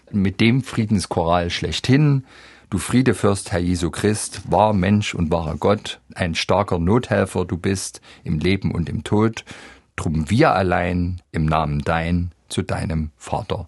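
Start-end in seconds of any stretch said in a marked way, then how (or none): none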